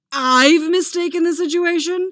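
loud, high, full-throated roar. Narrator voicing Mick answering a pompous man's rebuke, Mick roaring. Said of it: "Mick roars".

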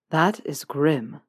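flat, monotone. Draco reacts to a story of barred bedroom windows, in a flat Draco monotone. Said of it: "Draco said, monotone".

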